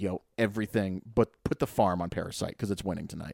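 ordinary talk, nothing marked

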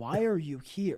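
acted-out irritated, baffled, slow, angry, puzzled tone. Retelling a stranger's reaction to a question about his moped: imitating an angry, puzzled look. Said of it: "angry and puzzled face".

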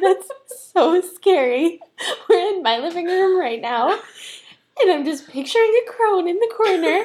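on the verge of tears, very high and loud. A listener hearing a ghost story from their living room, tearful. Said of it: "seeing the tears".

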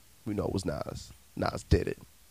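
conspiratorial aside, dropped to a hush.

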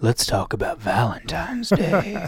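sultry, sexy, seductive come-hither delivery. Turning the conversation to Valentine's Day, in a sexy voice. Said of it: "that was my sexy voice".

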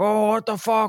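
put-on shrill, very high, loud screaming outburst. Retelling a film scene where one character catches another: imitating someone screaming. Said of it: "and screaming at him".

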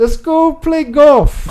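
put-on Scottish accent. Asked by the group for an accent, trying scottish: attempted scottish accent.

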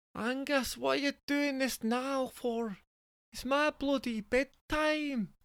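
very high-pitched, put-on Scottish woman's accent. As Jessica, speaking to Angus at bedtime, Jessica's Scottish accent. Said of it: "Jessica is actually Scottish".

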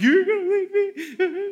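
put-on shrill, high, loud, drawn-out blubbering like a baby. Retelling a breakup, repeating own words to her: imitating own past sobbing. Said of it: "I sobbed in front of her".

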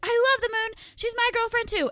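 very high-pitched, loud shouted yell. Recounting a night out, re-enacting two friends yelling a declaration loudly in public, with a retold yelling voice. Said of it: "and we're like yelling".

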